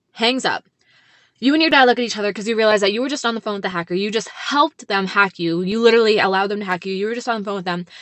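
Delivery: ordinary delivery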